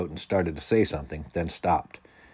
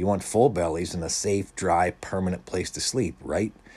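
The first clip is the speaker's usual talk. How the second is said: ordinary delivery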